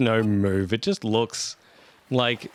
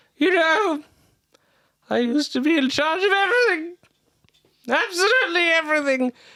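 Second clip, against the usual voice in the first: put-on very high, boozy drunken man voice. Narrating a story in which you hear a man speak behind you: drunken man voice. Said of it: "you hear a very drunken man say".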